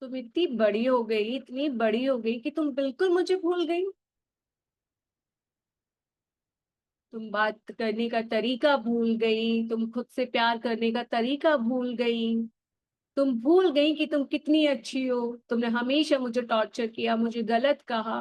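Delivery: ordinary talk, nothing marked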